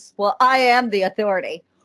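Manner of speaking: normal talking voice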